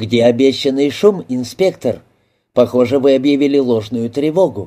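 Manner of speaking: ordinary delivery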